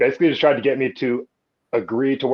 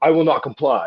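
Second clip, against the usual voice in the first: mock, half-joking, half-serious defiant tone; 3 semitones higher than usual. Retelling answering a coworker who handed over a mask, tongue-in-cheek. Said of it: "sort of tongue in cheek".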